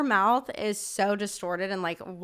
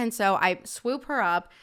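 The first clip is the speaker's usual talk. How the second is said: ordinary talk, nothing marked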